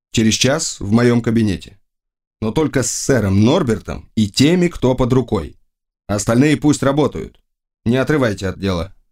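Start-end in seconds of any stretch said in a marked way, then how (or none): none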